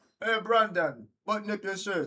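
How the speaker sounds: put-on speaking in a Jamaican accent. Retelling what the man he assists said to him, in a Jamaican accent. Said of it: "I'm doing a Jamaican accent".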